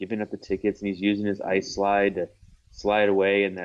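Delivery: ordinary delivery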